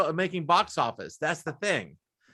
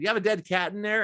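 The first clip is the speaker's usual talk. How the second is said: ordinary talk, nothing marked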